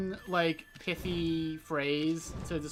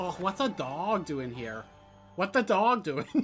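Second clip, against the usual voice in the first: put-on Minnesota accent, opening "oh" drawn long. Reacting to a dog on screen, the speaker slips into a Minnesota accent. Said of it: "I always get into my Minnesota by doing oh at the".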